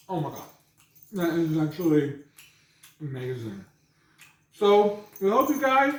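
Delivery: mouth full while speaking. Tasting the finished burrito after a bite, talking with mouth full. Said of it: "I shouldn't talk with my mouth full".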